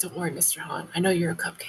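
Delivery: whispered aside. Speaking off to the side in a scene: whispering aside. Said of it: "I like kind of whisper off to the side".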